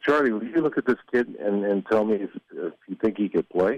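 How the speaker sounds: plain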